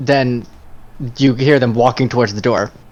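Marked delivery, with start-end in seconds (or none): none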